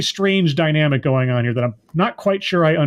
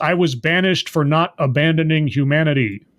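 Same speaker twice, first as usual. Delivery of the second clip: normal talking voice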